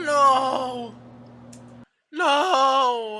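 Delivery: very high voice crack on a drawn-out no. Watching someone add peanut butter to toast and protesting, voice cracking. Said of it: "my voice cracked".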